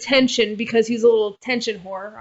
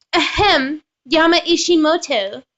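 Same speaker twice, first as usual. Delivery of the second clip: high, strident, pitched-up teacher voice; 6 semitones higher than usual. Reading a visual novel aloud, voicing the strident teacher: teacher voice like Cartman. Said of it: "I sound like freaking Cartman".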